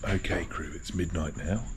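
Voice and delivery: whispering a little. Addressing the crew at midnight while everyone is quiet, whispering a little. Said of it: "That's why I'm whispering a little bit".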